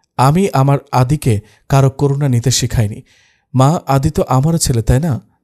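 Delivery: plain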